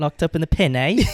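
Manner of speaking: put-on British accent. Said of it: "Do a British accent for me".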